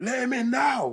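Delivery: frantic, very high pitch. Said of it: "I'm hearing my sister going mad".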